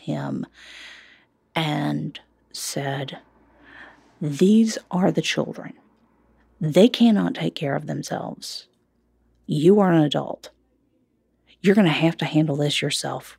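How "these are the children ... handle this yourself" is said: put-on hard, harsh, raised voice. Retelling words said to the husband while feeding two babies: retelling a harsh raised voice. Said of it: "I raised my voice in like the harshest tone".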